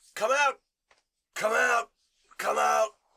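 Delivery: very gruff, very high, rough inhuman-sounding voice. An unseen speaker who doesn't sound human calls for others to emerge, in a very gruff, inhuman voice. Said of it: "It seems to be a very gruff voice".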